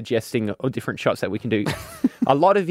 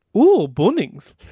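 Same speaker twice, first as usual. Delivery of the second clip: put-on German accent, higher and louder; 7 semitones higher, 5 dB louder than usual. Imitating Alex reacting to the bottle's logo: Alex impression in German accent. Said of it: "Can you do an impression of what Alex said?".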